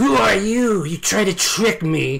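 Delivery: high, loud, demanding hiss. The game narrator voices her questioning the players, hissing. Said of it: "she hisses at you".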